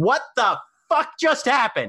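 very high, swooping, baffled and confused sudden outburst. A narrator voices a character calling across the grounds: Juniper Johnson, confused outburst. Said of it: "you hear Juniper Johnson's confused voice burst across the grounds".

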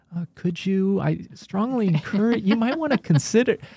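put-on very high-pitched, timid, tentative over-hedging. Retelling own old writing to a mentor: imitating own overly hedging tone. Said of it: "Why are you talking like that?".

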